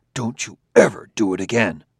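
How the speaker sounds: forceful, furious, angry whisper. Bailey scolds the other speaker while forced to keep quiet: angry whisper. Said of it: "speaking in an angry whisper".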